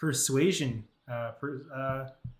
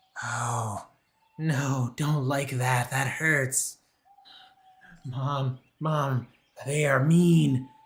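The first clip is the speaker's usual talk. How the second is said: loud, shrieking, drawn-out wailing monster voice; 5 dB louder than usual. A game narrator voices a hurt supernatural creature, shrieking and wailing. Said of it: "as this thing is shrieking and wailing out".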